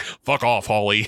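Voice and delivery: full, grown man's voice. Retelling a scene where Brandon answers his mom: full man's voice. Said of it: "with a full man's voice".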